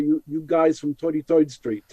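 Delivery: put-on thick, strong, old-style New York accent. Recalling how he used to talk years ago, in a strong New York accent. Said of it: "I used to have much stronger".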